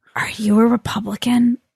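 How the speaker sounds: hushed, whispered tones. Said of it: "had her hushed tones".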